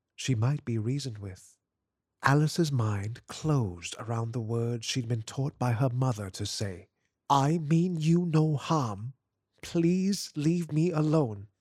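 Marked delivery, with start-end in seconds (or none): 7.3-11.4 hoarse, steady, firm and slow with authority. Alice says the words her mother taught her to say, hoarse but firm. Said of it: "Her voice was hoarse but firm".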